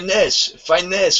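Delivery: put-on laid-on French accent. Show the other person how they were saying a word, imitating a French guy. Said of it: "you're saying it like a French guy".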